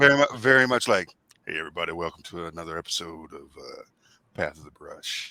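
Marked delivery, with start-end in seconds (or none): 1.5-5.3 deep, very soft, hushed host voice.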